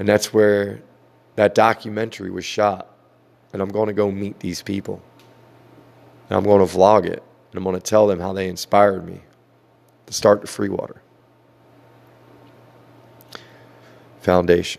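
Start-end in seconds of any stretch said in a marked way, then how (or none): 7.5-14.8 choked-up voice catching with emotion. Talking about the people who inspired the free water foundation, the speaker gets choked up. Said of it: "got a little choked up".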